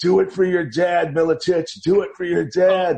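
put-on drunken heckling voice. Retelling what a drunk ringside family friend said in his ear: imitating drunk Eddie Langford. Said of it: "and he was drunk".

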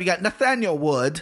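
terrible fake English accent. Announcing the next fighter on the card: terrible English accent. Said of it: "That was my English accent. It's terrible".

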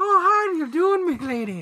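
hammy fake Irish accent, very high-pitched. Discussing an Irish mobster role, a speaker tries the accent: bad Irish accent. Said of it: "you're so good at that bad accent".

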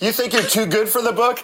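high mock yell with laughter.

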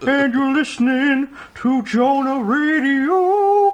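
cartoonish Texan father voice. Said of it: "Sounds like Hank Hill".

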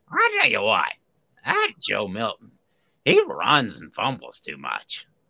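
slow, loud, big, swooping, drawn-out drawl. Answering a viewer's request to say a line: Andy Rooney voice. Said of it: "the Rooney voice".

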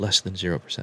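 mock muttering under the breath. Retelling what the nurse said about her daughter, imitating a mumble under the breath. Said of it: "she mumbles under her breath".

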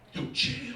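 high, unvoiced whisper-scream.

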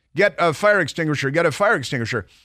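plain

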